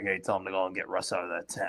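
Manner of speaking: fake low quiet whisper. Retelling a coach's sideline order to pull a player: imitating Pete Carroll whispering. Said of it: "he kinda whispered to somebody, like".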